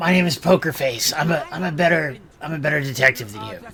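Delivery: put-on damaged, rough voice. In a group scene, a character introduces himself: Poker Face's smoker-damaged voice. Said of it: "I smoked a lot in my youth. It messed up my throat".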